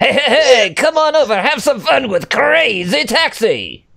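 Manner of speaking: bad British accent, cranked very high. Asked to improvise a British version of the game's voice: bad British Crazy Taxi voice. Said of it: "that sounded like an angry Armenian".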